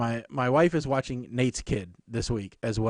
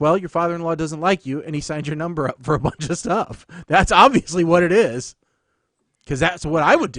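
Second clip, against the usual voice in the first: ordinary delivery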